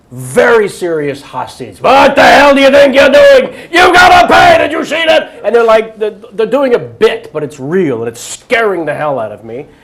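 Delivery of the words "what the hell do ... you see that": very loud, shrill, high-pitched furious shouting. Retelling how two men yelled at someone jumping the turnstile: imitating men yelling. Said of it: "two guys start yelling at me".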